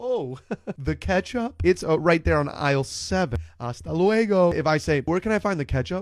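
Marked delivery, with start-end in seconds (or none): 0.0-4.5 laid-back, breezy, easygoing friendly helpful voice. Speaker imitates a supermarket worker's reply to an accented shopper, imitating relaxed, vacation-like clerk. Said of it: "They feel like they're on vacation".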